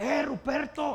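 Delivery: loud, drawn-out call from far away.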